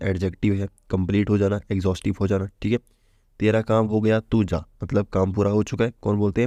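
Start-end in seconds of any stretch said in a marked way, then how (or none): none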